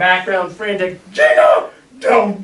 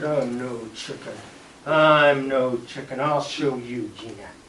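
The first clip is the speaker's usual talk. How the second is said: play-acted, stubborn, defiant, low and slow; 6 semitones lower, 7 dB quieter than usual. Retelling his reply after being called a chicken, retelling a defiant boast. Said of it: "I looked at her and I said".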